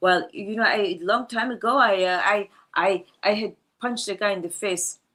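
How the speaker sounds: put-on Swedish-accented English, played up. Retelling what a swedish man told the speaker, in a swedish accent. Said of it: "I got to stop with the accent".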